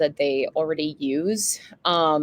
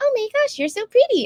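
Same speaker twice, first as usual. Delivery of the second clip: put-on cute little spider voice, much higher. Speaker describes making cute spiders that talk and comment; cute little spider voice. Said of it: "I love [name]'s voice acting. She's so cute".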